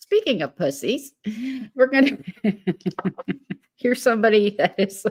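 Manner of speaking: giggly speech broken up by laughter. Greeting people in chat and starting the next topic, laughing while talking. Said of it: "sorry, I've been laughing".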